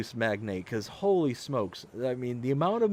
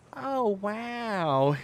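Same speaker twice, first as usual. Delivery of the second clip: put-on high, drawn-out, amazed little toddler-like "wow"; 7 semitones higher than usual. Speaker imitates a two-and-a-half-year-old girl when amazed: imitating a toddler's high 'wow'. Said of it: "she gets this little high pitched kind of inflection into her voice".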